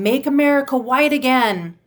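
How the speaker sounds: play-acted, high-pitched screaming. Retelling a man in a store who started screaming: imitating someone screaming. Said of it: "this one man started screaming".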